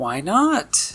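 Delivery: innocent little voice. Narrating a tour of the city, the speaker voices Audie: Audie's innocent little voice. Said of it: "Audie asks in her innocent little voice".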